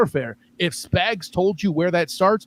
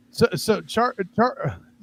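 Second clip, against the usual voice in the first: stumbling, stuttered start, tripping over first sounds; 3 semitones higher than usual. Put on the spot to answer first about a game, stuttering. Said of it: "I'm stuttering".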